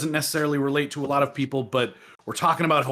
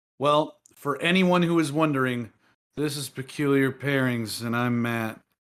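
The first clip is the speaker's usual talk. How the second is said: weary, sad, exhausted-sounding voice. Host Matt introducing the show Peculiar Pairings to listeners, sad, tired voice. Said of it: "sound so sad".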